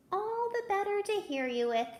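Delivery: silly, pitched-way-up voice. Reading a story, Big Bad Pete answers Little Red Riding Minnie, high funny voice. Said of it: "replied in his high, funny voice".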